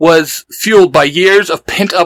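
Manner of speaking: ordinary delivery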